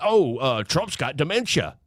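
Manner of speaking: plain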